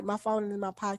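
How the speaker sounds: very soft, quiet, low voice.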